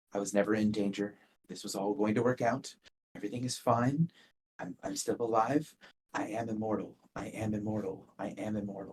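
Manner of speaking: very quiet, mumbled muttering to herself. Voicing a character repeating a mantra to herself, muttering under her breath. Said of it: "she's muttering under her breath".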